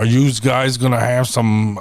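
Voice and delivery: put-on mimicked Philadelphia accent. Retelling how philly waitresses talk: imitating a philly waitress. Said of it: "some of the waitresses are like".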